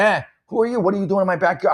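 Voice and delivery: put-on, high, screamed shouting. Recounting confronting a stranger in their backyard, retelling own screaming. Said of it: "I'm screaming, by the way".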